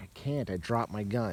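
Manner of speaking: ordinary talk, nothing marked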